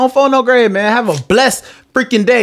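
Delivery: loose, slangy street-style delivery. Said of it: "She be like".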